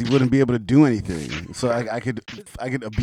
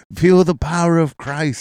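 loud, pitched-up televangelist sermon voice; 7 semitones higher, 6 dB louder than usual. Pretending to be a tv evangelist about to kick someone: put-on tv evangelist preaching voice. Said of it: "So it'd be like".

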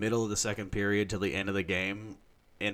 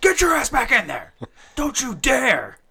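very loud, very high, shrill, booming, swooping scream; 12 dB louder than usual. Retelling yelling at friends to stay in the kitchen: imitating himself screaming. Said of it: "I was screaming at them anytime they started walking".

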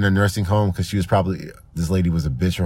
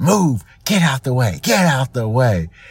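put-on woman's yell, barked high and rude; 6 semitones higher than usual. Retelling a woman on her way to check out, with two women in her way, imitating a woman yelling. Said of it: "she just starts yelling".

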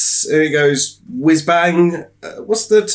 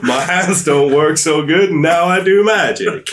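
put-on American accent, heroic style. Asked by the others to do an accent; Doctor Strange American accent. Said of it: "do a Doctor Strange American accent".

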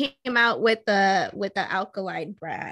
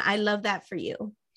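normal talking voice

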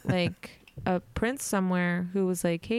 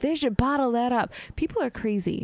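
unpleasant, rude voice, high in pitch; 5 semitones higher than usual. Retelling the same customer raving about the dressing: imitating an unpleasant customer. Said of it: "She would be like".

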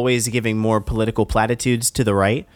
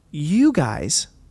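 slow put-on robotic voice, higher; 4 semitones higher than usual. Retelling a debate slowed down: slow robotic Kamala Harris voice. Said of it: "her Clinton-esque robot voice".

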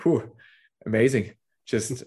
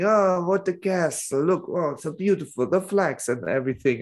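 put-on, pitched-up Italian accent; 6 semitones higher than usual. Telling a joke about nationalities, voicing the Italian: imitating an Italian. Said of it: "the Italian guy saying".

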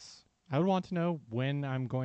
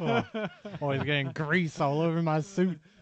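put-on country-style rural accent; 4 dB louder than usual. Joking about a work dress code: put-on redneck accent. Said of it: "you really gotta stop doing that accent".

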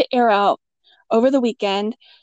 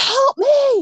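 mock, high-pitched, urgent yelling, calling out loudly. Retelling calling out to her husband after rushing from the shower, retelling a yell. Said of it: "I'm yelling at my husband".

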